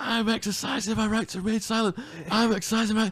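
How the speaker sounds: yelling, pitched way up. Recounting being arrested, the speaker re-enacts yelling to his missus, retelling own yelling. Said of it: "And I'm yelling at my missus then".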